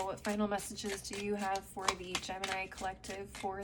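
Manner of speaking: plain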